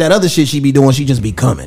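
usual speaking voice

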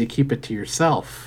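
normal talking voice

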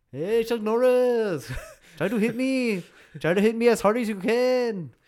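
loud, high put-on Brazilian accent, "can" stretched out. Acting out one of the Gracies talking to Chuck Norris, use a put-on Brazilian accent. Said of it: "I'll try to do the Brazilian accent".

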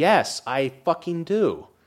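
very slow, furious, angry delivery. Ranting to other speakers about hating a movie: angry. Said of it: "why are you so angry about it?".

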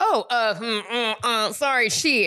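mock-flustered stammering. Retelling how Uber drivers react to her high voice, imitating flustered stammering. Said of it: "they're like".

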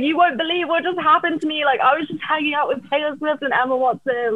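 put-on high, worked-up, wound-up yelling and screaming. Retelling own words to an Uber driver: retelling own screaming.

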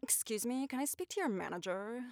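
very quiet, hushed, tentative character voice. A voice actor recalls warming up for a role: practicing a character voice. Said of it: "trying to get into character for my voice".

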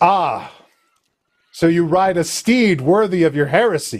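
stern, severe, disapproving high-cleric nun voice. Voicing a stern high cleric greeting the players: stern high cleric character. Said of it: "She says".

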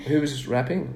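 bone-dry, flat, no-joke deadpan delivery. Recounting being invited to a party at the end of a season; deadpan. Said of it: "My deadpan humor's failed again".

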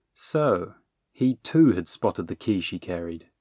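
ordinary delivery, nothing marked

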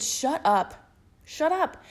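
mock exasperated, high-pitched, fed-up repeated screaming. Speaker recounts yelling at a guy they liked, retelling a scream. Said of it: "I literally screamed".

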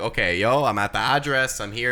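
ordinary talk

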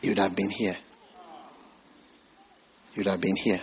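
soft, hushed, secretive half-whisper. Retelling words heard while driving by a church: retelling a half-whisper. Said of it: "the Holy Spirit whispered to me".

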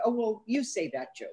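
light, offhand, casual tone. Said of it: "where today they'll say".

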